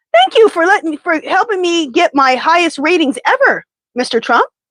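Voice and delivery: plainly insincere sarcasm. Retelling how Jimmy Kimmel thanked Trumpenstein: imitating Jimmy Kimmel's sarcastic thanks. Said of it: "Jimmy thanked Trumpenstein sarcastically".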